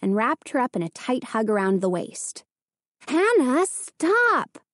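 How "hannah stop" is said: pitched-up crying out. Narrator reads a mother as her daughter hugs her at the stove: crying out. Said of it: "her mother cried".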